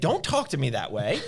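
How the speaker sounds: really upset, sharp reply tone. Retelling what an upset dad said to a mother: imitating someone upset. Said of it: "And he got real upset".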